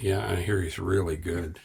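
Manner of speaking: very low, soft, bone-dry flat deadpan. Retelling a reply to a man in line who did not know the speaker; deadpan. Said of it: "I just looked at him with a deadpan".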